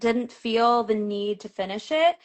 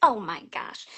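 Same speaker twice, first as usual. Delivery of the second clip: put-on slight, light Michigan accent. Imagining how her mom would react, with a little Michigan accent. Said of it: "was that a little Michigan accent thrown in there".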